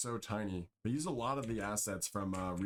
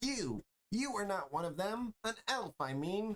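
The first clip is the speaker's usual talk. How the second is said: very high, squeaky little gnome voice; 11 semitones higher than usual. Narrating a game scene and voicing a gnome to the listener, gnome voice. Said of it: "That's the only voice you're ever going to get".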